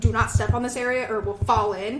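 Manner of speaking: ordinary talk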